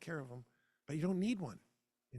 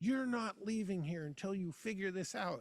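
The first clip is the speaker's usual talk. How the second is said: mock stern shout, contained and held in check; 5 semitones higher than usual. Retelling sitting in a truck after panicking: retelling own yell. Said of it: "And I remember yelling".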